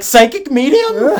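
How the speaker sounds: voice cracking up very high. Retelling introducing someone awkwardly, imitating own voice cracking. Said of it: "my voice literally cracked".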